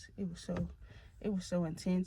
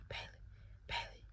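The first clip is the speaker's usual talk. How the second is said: hushed whisper, much quieter. Retelling mama coming into the room to wake them, whispering. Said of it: "whispering like".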